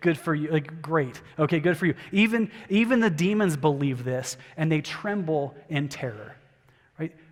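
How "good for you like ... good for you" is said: sarcastic, mocking delivery. Showing how the verse's line sounds: sarcastic. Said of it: "a sarcasm font in the Bible".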